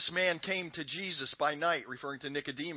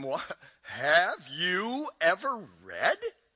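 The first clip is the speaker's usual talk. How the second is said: cutting, biting sarcasm, swooping and slow; 2 semitones higher, 4 dB louder than usual. Acting out a man's reply to a group, in a mock biting, sarcastic tone. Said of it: "imagine that being said with biting, sarcastic tone".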